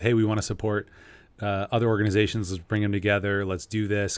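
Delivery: ordinary talk, nothing marked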